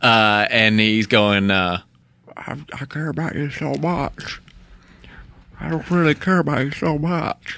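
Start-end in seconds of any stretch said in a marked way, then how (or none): 2.4-7.6 comical thick-tongued voice, as if tongue too big. Quoting a movie character's line in the funny Joaquin Phoenix voice. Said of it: "that funny Joaquin voice".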